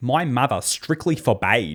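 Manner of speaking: put-on Australian accent. Repeating the narrator's line back: imitating the australian accent. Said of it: "I'm so distracted by how Australian this accent is".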